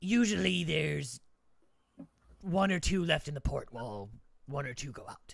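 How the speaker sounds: loud, dismissive, condescending dwarf voice. Game master as a three-foot-tall character answering a player's question: condescending dwarf voice. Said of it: "He's not 3 feet tall. He's 6 feet tall. I'm 3 feet tall. / I'm 3 feet tall. / Of course he's condescending".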